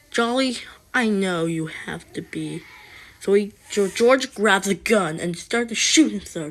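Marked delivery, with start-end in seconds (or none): none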